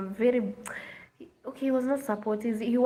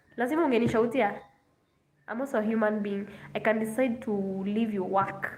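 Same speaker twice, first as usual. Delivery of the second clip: normal talking voice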